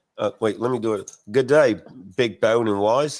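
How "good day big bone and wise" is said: put-on Australian accent, trying hard. Reading a listener's greeting from Australia aloud, the speaker tries a put-on Australian accent. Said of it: "That's my Australian accent".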